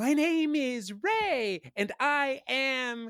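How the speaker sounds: very high, squeaky put-on child voice. Speaker retells what one of the kids said: mimicking a really high voice. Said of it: "my voice is really high".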